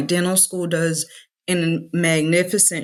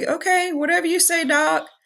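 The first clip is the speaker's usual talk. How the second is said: put-on very high, sweet little old lady voice; 12 semitones higher than usual. Retelling what a sweet old patient said: imitating a sweet old lady. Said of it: "this sweet old lady that's like".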